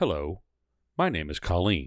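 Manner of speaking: machine-like automated phone-line recording voice. Retelling a phone call where the agent answered, imitating an automated phone voice. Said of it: "that sounds like a fucking automated".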